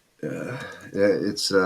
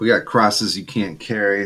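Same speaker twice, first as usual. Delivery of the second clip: usual speaking voice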